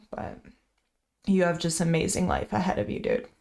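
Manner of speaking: holding back tears. Speaking to the other person in an emotional moment, holding back tears. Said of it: "Trying to hold it back right now".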